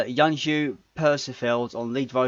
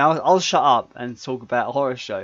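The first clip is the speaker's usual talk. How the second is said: usual speaking voice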